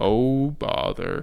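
soft, whispery, breathy, hushed cartoon donkey voice. Showing a companion one of a few impressions, in an Eeyore impression. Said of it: "I can do a few impressions. Eeyore is one of them".

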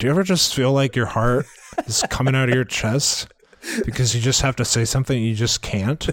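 flat, emotionless robotic monotone. Asked to say a line in the Jed voice: flat monotone Jed voice. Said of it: "Say it in the Jed voice, really monotone and with no passion or feeling, like a robot".

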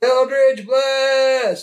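shouted loudly. Casting a spell in the game by calling its name: screaming a spell name. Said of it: "as you scream out your Eldritch Blast".

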